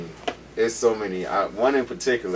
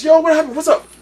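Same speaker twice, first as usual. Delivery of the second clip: sudden, very high, very loud scream; 11 dB louder than usual. Retelling a sudden fright in the car at night: imitating someone screaming. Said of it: "he screams out of nowhere".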